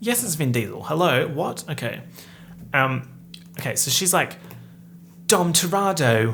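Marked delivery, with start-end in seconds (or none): 5.3-6.3 put-on loud, jarring, shouted thick Cockney accent. Retelling Helen Mirren's part in a movie, say the name in Helen Mirren's Cockney accent, yelling. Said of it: "Where the hell did that accent come from? Sorry for yelling".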